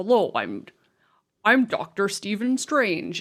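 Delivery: bad American accent, slow, swooping, sing-song drawl. Mocking an actor's bad American accent as Doctor Strange: imitating Benedict Cumberbatch's bad American accent. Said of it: "his accent during the whole of that first Doctor Strange movie".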